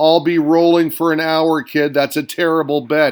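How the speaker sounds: ordinary talk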